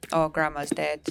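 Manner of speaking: ordinary talk, nothing marked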